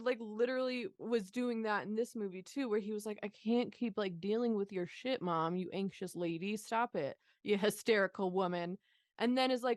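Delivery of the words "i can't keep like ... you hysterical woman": ordinary delivery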